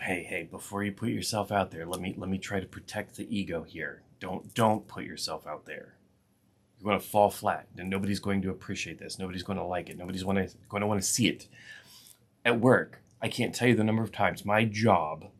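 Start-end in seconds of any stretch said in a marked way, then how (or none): 0.0-11.5 mock whispering voice, quieter. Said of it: "it's there to whisper and tell you".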